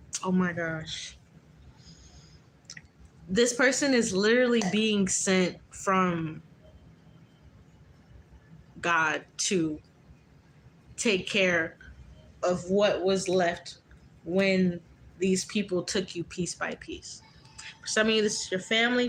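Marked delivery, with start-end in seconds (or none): 0.2-17.2 very slow, fighting off crying, holding back tears. Speaking to y'all, the audience, while holding back tears. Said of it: "don't make me cry".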